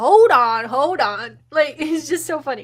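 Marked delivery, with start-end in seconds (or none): 0.0-1.4 put-on loud country boy accent, "on" stretched long. Describing how a man talks, imitating a country boy accent. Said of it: "you're such a country boy because he's like".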